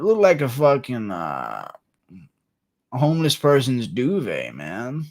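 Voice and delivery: sing-song delivery, pitch swooping through the words. Doing a requested impression for chat: Theo Von impression. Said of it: "Theo Von impression".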